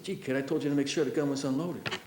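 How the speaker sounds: hushed, barely there half-whisper. Retelling what a hunting companion said after the gun went off: imitating someone half-whispering. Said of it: "Then he whispers".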